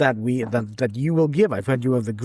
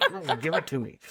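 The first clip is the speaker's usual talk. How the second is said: soft, whiny, a little fed up, acted out; 2 semitones higher, 7 dB quieter than usual. Retelling a story, the speaker acts out a man's line, mock-frustrated. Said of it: "gets a little frustrated and is like".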